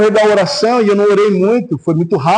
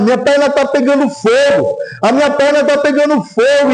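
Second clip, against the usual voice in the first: mock man's cry, high and contained, shouted; 5 semitones higher than usual. Retelling a man jumping around the room after being touched, imitating someone shouting.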